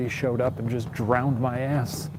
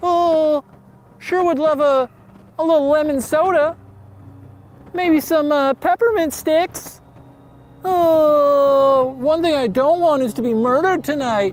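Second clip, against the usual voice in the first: very high-pitched, loud put-on little-boy voice; 7 dB louder than usual. Pretending to be a child alone by the river at night: pretending to be a little boy. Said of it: "pretending he's a kid".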